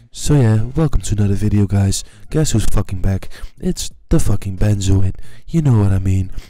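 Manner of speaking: soothing, low, loud voiceover actor voice.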